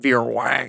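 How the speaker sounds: exaggerated, really deep, low bass voice. Retelling own line from a film scene: imitating own deep voice. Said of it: "in a really deep voice".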